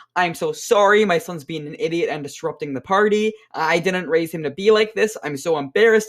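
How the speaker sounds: ordinary delivery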